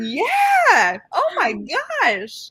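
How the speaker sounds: put-on thrilled shout, very high and very slow. Retelling reacting to a book at the library: imitating own excited yelling. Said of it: "I couldn't stop yelling".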